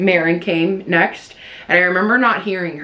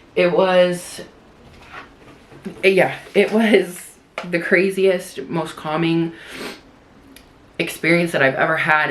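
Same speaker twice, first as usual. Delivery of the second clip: fighting tears, holding them back. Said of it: "let me take a break for a minute".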